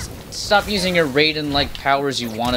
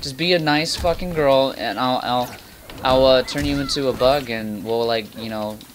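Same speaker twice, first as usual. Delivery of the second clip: ordinary talk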